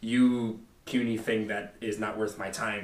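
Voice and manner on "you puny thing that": usual speaking voice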